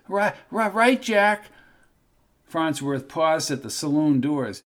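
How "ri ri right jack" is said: hoarse, raspy, stammering voice, pitched up. Reading a story aloud, a nervous man answers: raspy voice. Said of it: "answered in a raspy voice".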